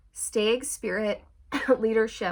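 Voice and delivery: voice breaking and cracking mid-phrase. Talking to viewers, the speaker's voice cracks: voice cracking. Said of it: "My voice just cracked".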